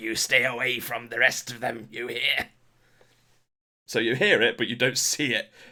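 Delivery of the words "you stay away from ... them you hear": eerie, weird, demonic possessed-creature voice. Narrating a scene, the storyteller voices a woman speaking in tongues, in a weird demonic voice. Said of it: "in like a weird demonic voice".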